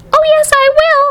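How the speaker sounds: tiny squeaky voice, pitched very high. Narrating Mike TV's reply to Mrs. TV; Mike TV squeaking, tiny voice. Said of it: "squeaked the tiny voice of Mike TV".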